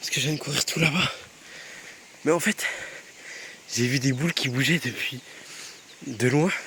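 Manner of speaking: breathless, out of breath. Talking to the camera just after running far: out of breath. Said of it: "désolé, je suis essoufflé".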